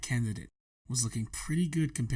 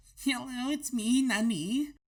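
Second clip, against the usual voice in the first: put-on squeaky, very high-pitched anime girl voice; 13 semitones higher than usual. Playing a new co-host on the show, in a high-pitched anime girl voice. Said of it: "do a pitched up voice and be an anime girl".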